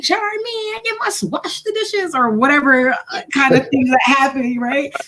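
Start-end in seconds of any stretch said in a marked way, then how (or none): 0.0-2.1 put-on accent from Guyana. Retelling a story about mom, imitating mom with Guyanese accent. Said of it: "My mother's Caribbean, right? She's Guyanese".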